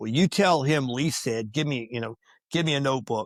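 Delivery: ordinary talk, nothing marked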